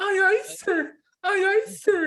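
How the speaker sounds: put-on very high-pitched, girlish, drawn-out shriek. Retelling how Kwashi screamed when told to: imitating Kwashi's girlish scream. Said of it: "he screams like a girl".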